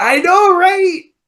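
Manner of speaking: very high, loud, gushing squeal. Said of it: "Christopher Titus is like".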